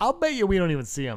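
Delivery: mock tongue-in-cheek sarcasm. Recalling what he said when the show was announced: retelling own sarcastic remark. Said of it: "I said that kind of sarcastically".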